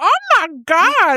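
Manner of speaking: loud, high-pitched schoolgirl exclamation. Retelling a skit where the schoolgirl character reacts: Kylie Mole impression. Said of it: "And she's".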